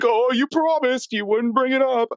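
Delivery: very high, pissy, sulking voice. Mocking cartoon characters who sulk when questioned: imitating Shaggy being pissy and moody. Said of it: "Shaggy and Scooby get all pissy and moody, like".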